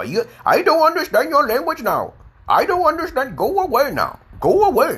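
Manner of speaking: very high-pitched, sing-song Indian accent. Acting out someone who cannot understand another's English: imitating an Indian accent. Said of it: "I'm talking like an Indian now".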